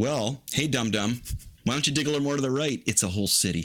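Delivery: high, teasing tone dripping with sarcasm. Talking about archaeologists at an ancient site: sarcastic. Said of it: "I'm being sarcastic".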